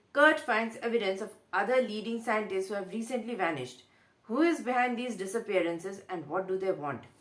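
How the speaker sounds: usual speaking voice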